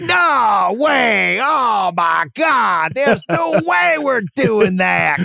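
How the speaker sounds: very high, very slow, creaky rasp. Imitating Verno turning down a trade offer: Verno impersonation. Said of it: "That's my Verno impersonation".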